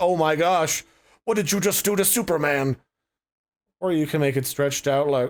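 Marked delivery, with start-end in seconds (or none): 0.0-2.8 frantic, panicked freaking-out voice. Showing bulky text as a character that's freaking out: panicked put-on voice. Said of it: "like it's freaking out and going".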